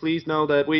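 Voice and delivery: flat, level, unfeeling robotic voice. Giving an example of the intended voice from Portal: GLaDOS voice. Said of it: "Portal, the glados".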